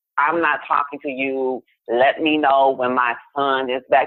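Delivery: ordinary talk, nothing marked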